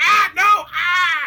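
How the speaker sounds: very high, loud shrieks of pain. Voicing goblins being attacked behind a door: screaming in pain. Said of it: "they're screaming in pain".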